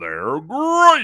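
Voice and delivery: very loud, high-pitched cartoon mascot shout. Asked to do it again, repeating the impression: Frosted Flakes commercial impression. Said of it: "My best impression".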